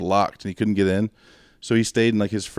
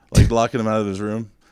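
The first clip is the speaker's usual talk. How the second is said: ordinary talk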